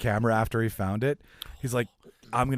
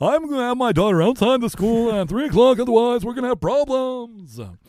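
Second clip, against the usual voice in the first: shrill, booming, very high, very loud principal voice; 13 semitones higher, 9 dB louder than usual. On a show with listeners, try a Mister Rooney impression that comes out sounding like Seinfeld. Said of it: "Do I sound like Seinfeld when I try to do Mister Rooney".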